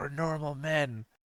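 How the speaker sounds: hushed, very quiet half-whisper. Retelling what a Muppet said to a girl on TV: imitating a half-whisper. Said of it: "And he whispers to her".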